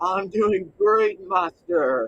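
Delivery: slow, dutiful zombie servant voice. Playing a zombie answering its master, in a zombie servant voice. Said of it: "you had a different voice and all of a sudden".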